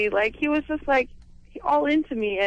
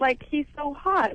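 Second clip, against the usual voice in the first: ordinary delivery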